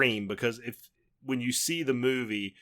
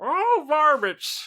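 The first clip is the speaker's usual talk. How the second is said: squeaky, very high, loud put-on prospector voice; 7 dB louder than usual. Told they like the prospector, doing a prospector voice. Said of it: "I'm trying to do a prospector voice".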